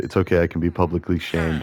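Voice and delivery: ordinary talk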